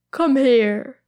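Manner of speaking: said through a light laugh. A man reaches for an elf's arm, speaking with a laugh. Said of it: "he says with a laugh".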